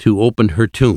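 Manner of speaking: ordinary delivery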